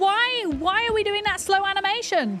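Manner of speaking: very high-pitched shouting. Reacting live while chatting with viewers, shouting. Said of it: "Sorry, I'm shouting".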